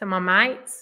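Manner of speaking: put-on, exaggerated broad Australian accent. Wrapping up a chat with an audience, repeating a phrase in an exaggerated Aussie accent. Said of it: "Try and sound really Aussie".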